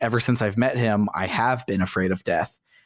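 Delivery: ordinary delivery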